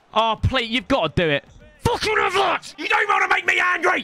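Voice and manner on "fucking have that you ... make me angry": very high, agitated, worked-up yelling. Playing a football match, urging the shot on: worked up shouting. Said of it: "Whoa, calm down".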